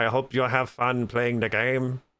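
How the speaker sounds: level, dragging, flat drawn-out drone, very slow. Imitating a man wishing players fun with the game, in a flat monotone. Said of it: "he's just kind of up there monotone. Like".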